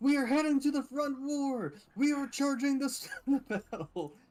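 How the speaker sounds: very high, booming, amplified yell. Tabletop player in character, using thaumaturgy to amplify the voice, booming as loud as possible. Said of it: "booming my voice as loud as I can".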